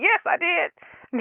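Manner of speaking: play-acted snippy tone, very high-pitched. Retelling own answer to husband about her period: snippy reply with attitude. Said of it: "With an attitude".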